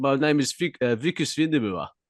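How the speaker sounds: put-on South African accent. Asked about District Nine, doing its lead character: Wikus South African accent. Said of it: "are you going to say in South African accent?".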